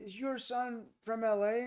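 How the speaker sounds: very high, slow, drawn-out, acted drunk man's voice. Retelling the drunk guy talking to their mom, the speaker is imitating a drunk man. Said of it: "talking to the drunk guy".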